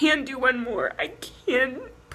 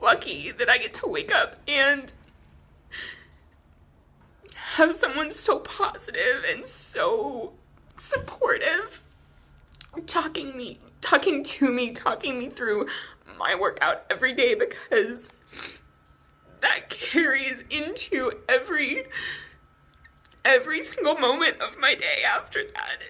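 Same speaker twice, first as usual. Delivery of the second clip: tearful, crying while talking. Speaker telling listeners about someone who talks them through daily workouts, crying while talking. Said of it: "And now I'm crying too much".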